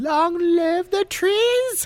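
mock solemn, very high, slow, dragged-out proclaiming tone.

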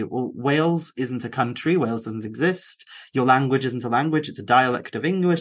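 plain

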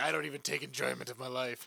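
put-on impression, low, creaky, smoky-sounding voice.

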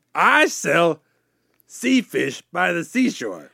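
put-on Louisiana Cajun accent, character voice. Comedy bit introducing neighbor characters, Cajun Larry accent. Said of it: "it's me, Cajun Ted".

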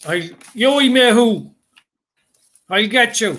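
put-on shouting. Telling of a man with a stick at the water, imitating a man shouting. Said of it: "and he was shouting".

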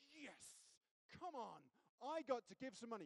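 gleeful, joyful, eager whooping cheer. A speaker demonstrates pushing a button when giving money, joyful cheer. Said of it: "should do it joyfully".

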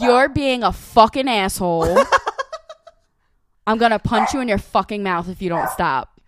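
very loud, swooping, thick New York accent. Showing how she'd tell off someone rude, asked for more accent: strong new york accent. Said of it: "More accent".

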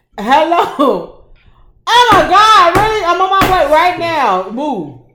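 booming, very loud, shrill, drawn-out pretend voice. Acting out answering the phone to leave: pretending to answer a phone call. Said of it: "I'm gonna answer the phone".

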